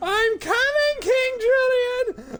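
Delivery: very high, squealing, swooping, drawn-out funny yell. Redoing a past funny scream from a stream: screaming as Mort. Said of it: "my funniest scream of all time".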